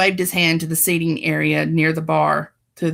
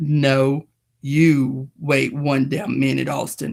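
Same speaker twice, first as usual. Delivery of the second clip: very deep, slow, drawn-out character voice, lowest register; 3 semitones lower than usual. Narrator reading a novel aloud, a character replies to Flynn: deepest voice. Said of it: "that deepest voice".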